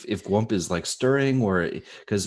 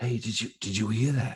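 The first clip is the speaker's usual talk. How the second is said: quiet voice, higher; 2 semitones higher, 5 dB quieter than usual. A character walks over to her, trying not to wake anybody, in a quiet voice. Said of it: "I'm kind of quiet before we wake up anybody".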